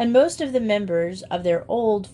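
plain

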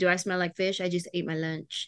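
soft, silly, sassy close-up teasing. Retelling how a nail tech joked while doing nails: imitating nail tech John. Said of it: "blow his breath in my face and be like".

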